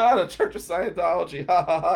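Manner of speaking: loud laughter through the words. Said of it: "I start laughing".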